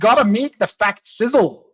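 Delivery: put-on heavy Scottish accent. Retelling a sales trainer's words: thick Scottish accent. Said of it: "in a fat Scottish accent".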